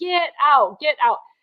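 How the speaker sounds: high-pitched screaming. Retelling being woken on a cruise by someone, imitating his screaming. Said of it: "He started screaming".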